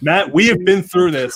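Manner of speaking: yelling, scolding tone. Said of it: "are you yelling at me, [name]?".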